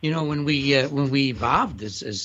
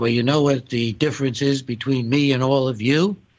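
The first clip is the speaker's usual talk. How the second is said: ordinary talk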